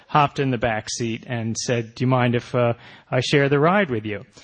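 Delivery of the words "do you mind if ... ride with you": ordinary talk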